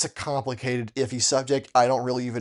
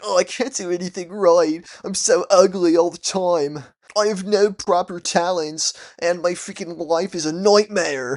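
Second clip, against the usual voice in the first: high, loud whining; 6 semitones higher, 5 dB louder than usual. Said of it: "I was a whiny freaking mess".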